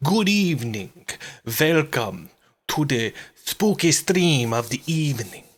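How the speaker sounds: drawn-out words in a Russian accent. Host welcoming viewers to a spooky evening stream, in a Dracula voice, sounding Russian. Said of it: "Why do I sound like a Russian? It's supposed to sound like Dracula".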